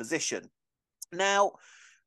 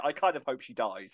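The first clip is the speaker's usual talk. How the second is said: usual speaking voice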